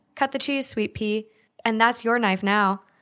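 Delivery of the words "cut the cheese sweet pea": plain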